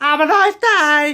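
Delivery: loud voice breaking very high. Signing off a gaming video to viewers, the speaker's voice cracking. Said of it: "voice crack".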